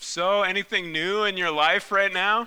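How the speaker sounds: mock anxious, high-pitched, pointed passive-aggressive tone. Retelling a mother's phone call: imitating mom's anxious passive-aggressive tone. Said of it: "you can sense the anxiousness in her voice, this passive-aggressive".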